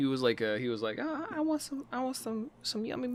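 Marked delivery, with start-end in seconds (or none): 1.0-3.2 put-on child voice, pitched very high. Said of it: "Great, great [name] impression".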